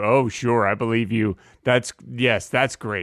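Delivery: dry, obviously sarcastic tone. Agreeing with the other speaker after an argument: sarcastic tone. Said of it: "that's a sarcastic tone".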